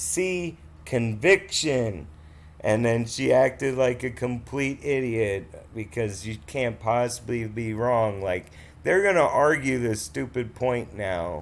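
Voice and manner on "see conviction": voiced stage-whispered aside. Retelling what was whispered during testimony: retelling own whisper. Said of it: "whispered to her".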